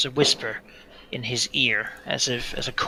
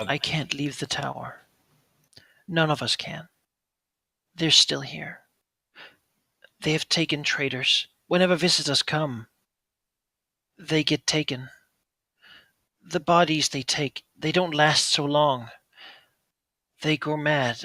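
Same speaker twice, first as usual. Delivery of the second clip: fearful yet determined whisper; 3 semitones higher than usual. A narrator voicing an unseen voice whispering to Roland: afraid but resolute whisper. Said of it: "The voice sounds afraid, but resolute".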